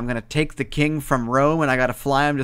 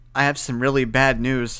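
ordinary talk, nothing marked

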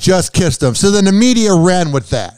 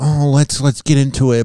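put-on slow, gloomy, deflated, mopey sad tone; 4 semitones lower than usual. Mimicking how she introduced the cheating news: mock-sad Khloe impression. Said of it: "She sounds so sad, like".

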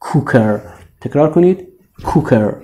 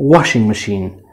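washing stressed hard, machine said more softly; 5 semitones lower than usual. Persian-language lesson on where stress falls in washing machine: stress on washing. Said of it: "استرس رو کدومش رو واشینگه؟".

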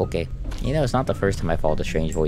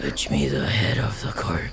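put-on demon voice, lower; 3 semitones lower than usual. A player voices the demon in the hole during the game, demon voice from the hole. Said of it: "The demon in the hole wants you to cut up my fish. ... I can't do that voice again like last time. I hurt my throat for like 2 days".

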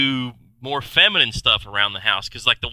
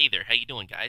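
quieter, put-on feminine voice; 7 dB quieter than usual. Describing four distinct Michael Keatons talking to each other, feminine Michael Keaton impression. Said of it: "The other one's very feminine".

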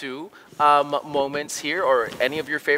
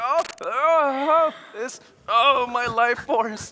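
high, slow dramatic dying cry.

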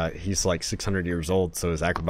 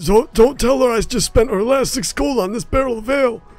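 put-on very high, shrill, loud, yelling old man voice; 7 dB louder than usual. In a tabletop game, a grandpa hiding from his wife: old man voice. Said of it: "I assume you're an old man".

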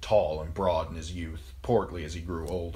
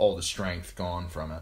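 ordinary delivery, nothing marked

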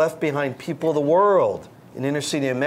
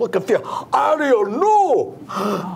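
put-on high-pitched, well-done West Indian accent; 7 semitones higher, 4 dB louder than usual. Speaker describing a book of Disney sidekicks, quoting Sebastian: Sebastian West Indian voice. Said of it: "Nice West Indian voice".

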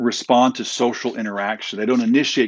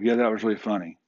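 soft, flat, expressionless, level monotone; 5 dB quieter than usual. Explaining flat affect, speaker imitates someone's reply in a flat monotone voice. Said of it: "Like a monotone speech".

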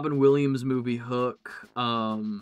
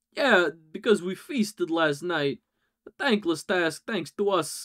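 stilted put-on voice, higher pitched; 5 semitones higher than usual. Voicing a game character with a stilted Christopher Walken voice. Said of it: "Christopher Walken. Really stilted".

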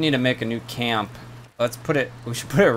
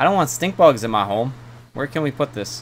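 usual speaking voice

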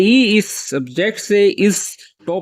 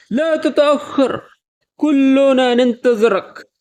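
solemn, forceful, slow, serious, emphatic speech in Arabic; 5 semitones higher than usual. Showing how to call out in arabic to someone running late, speak serious and emphatic. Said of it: "تھوڑا سنجیدہ اور زور دے کر بولیں گے".

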